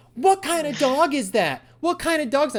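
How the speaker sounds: high, shrill screaming over and over. Retelling how a neighbor's mom shouted a question: imitating a mother screaming. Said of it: "his mom starts screaming".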